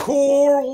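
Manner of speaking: high, far-off call across a distance. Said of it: "It's funny how he gets".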